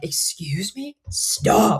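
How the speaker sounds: coaching voice, pitched high. Retelling how the speaker told the boys to stop, in a loud coaching voice. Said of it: "with my loud coaching voice".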